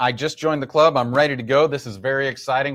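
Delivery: ordinary delivery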